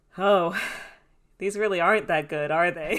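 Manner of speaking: put-on solemn tone. Retelling what someone said while watching cartoons together, imitating a solemn tone. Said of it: "in like a very solemn like tone of voice".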